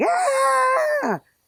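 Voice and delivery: mock scream, high, loud, sudden and sharp.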